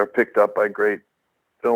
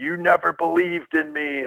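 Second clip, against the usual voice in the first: acted, high, drawn-out yelling; 7 semitones higher than usual. Retelling leaving the ring after a pile driver: imitating someone yelling. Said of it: "I was yelling at the audience".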